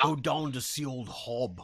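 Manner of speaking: put-on, laid-on English accent. Quoting a line from a film sequel, in an English accent. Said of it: "it's that English accent".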